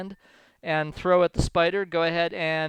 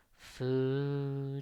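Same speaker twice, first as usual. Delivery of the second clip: creepy spider-creature voice, lower and quieter; 3 semitones lower, 11 dB quieter than usual. Voicing a sound the players hear through a wall: creepy spider voice. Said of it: "Creepy, creepy, creepy spider voice saying food".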